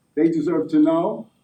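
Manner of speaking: ordinary talk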